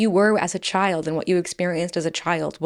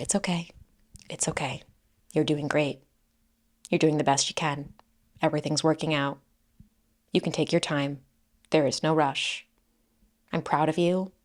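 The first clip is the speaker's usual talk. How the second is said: soft, sweet, gentle, kind, quieter whisper; 2 semitones lower, 5 dB quieter than usual. Speaker demonstrating how they talk to themselves, in a soft sweet whisper. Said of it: "I will often be found whispering to myself".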